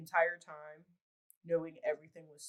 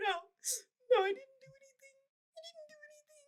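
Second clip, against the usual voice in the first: mock tearful sobbing, very high and slow. Retelling a woman's protests as she was handcuffed: imitating someone crying. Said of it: "she's like crying like that the whole time".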